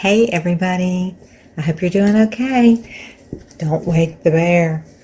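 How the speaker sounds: speaking softly and quietly. Early morning, greeting viewers while her husband is still in bed: talking quietly. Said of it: "I'm talking quiet because my husband is still in bed".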